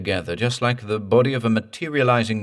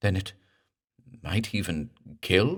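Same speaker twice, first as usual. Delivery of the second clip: hushed, quieter, stammering delivery; 5 dB quieter than usual. Reading a story aloud, the clergyman answers the doctor in a hushed stammer. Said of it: "stammered the clergyman presently in a hushed voice".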